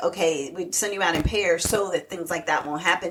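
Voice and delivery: ordinary delivery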